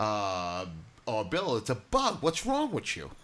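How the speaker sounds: mocking, put-on, sarcastic, cutting tone. Speaker acts out someone answering Bill bluntly, as a mock-sarcastic retort. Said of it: "I'm not going to be sarcastic like that".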